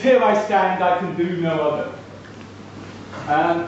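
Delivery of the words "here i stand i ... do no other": ordinary delivery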